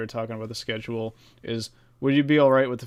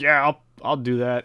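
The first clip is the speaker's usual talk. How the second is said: fake Southern American accent; 2 semitones higher, 4 dB louder than usual. Imagining nobody agreeing to fund an IndyCar finale, Southern accent. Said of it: "I just went for the southern accent there".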